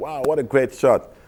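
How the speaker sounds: high-pitched, excited shout.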